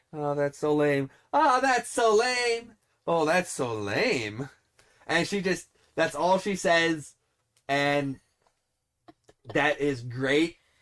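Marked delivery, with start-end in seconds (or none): 0.2-4.5 inflection changing with each emotion, shifting inflections. Describing a character who only says one line, imitating her shifting emotional inflections. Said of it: "she says it in different inflections based on the emotion".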